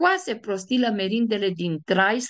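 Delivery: ordinary delivery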